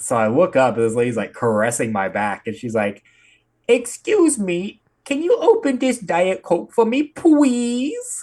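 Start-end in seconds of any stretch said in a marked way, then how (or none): 3.7-8.2 put-on very high, slow, babyish toddler talk. Retelling an old lady asking for help: imitating an old lady's toddler voice. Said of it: "talking like a toddler".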